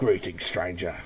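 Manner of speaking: quiet, low, soft drawl. Showing the voice just used for a game merchant: Resident Evil 4 shopkeeper voice. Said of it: "my Resident Evil four shopkeeper voice".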